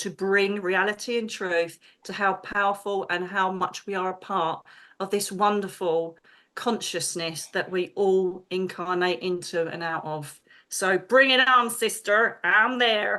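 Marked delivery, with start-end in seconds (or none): 10.7-13.2 poor, clumsy fake American accent. Addressing someone as sister, the speaker signs on in a bad American accent. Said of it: "That was a really bad accent".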